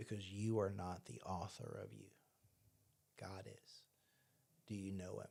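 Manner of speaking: mock-stern woman's voice. Retelling a woman's pointed question to them, mock-stern like a teacher. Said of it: "like that very stern".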